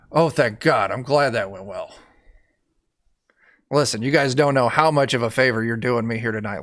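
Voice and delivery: put-on unguarded relief, whiny accent dropped. Voicing the servant once out of the court: dropping the whiny accent, relieved. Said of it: "his facade kinda drops".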